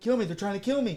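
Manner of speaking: high, panicked cry.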